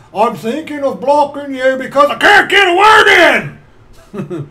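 put-on loud, high, rising yell like a little child. Retelling how a stream's proprietor yelled at a drunk woman: imitating someone yelling. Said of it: "yelling at this drunk woman".

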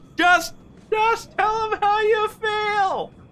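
high-pitched, slow, drawn-out yell. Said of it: "would have just yelled out and go".

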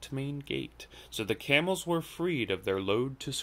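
ordinary delivery

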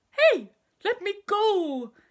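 shrill, booming, drawn-out yell swooping wildly in pitch. A crocodile dangling upside down from Trunky's trunk, yelling. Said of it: "yelled the enormous crocodile".

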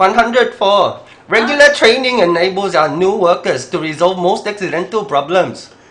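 booming put-on Vietnamese woman's accent in English. Speaker reading an English sentence in a Vietnamese woman's accent. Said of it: "베트남 한 20년 정도 된 베트남 여자".

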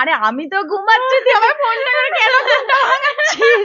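groggy, annoyed voice, whined out high and loud.

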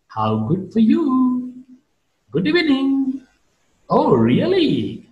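ironic up-down glide on good, evening, really. Explaining how sarcasm is marked, saying example phrases with rising-falling tone. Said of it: "I am using rising falling tone".

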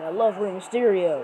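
ordinary talk

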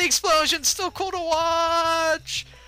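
high, slow, silly put-on voice. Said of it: "why am I doing this voice".

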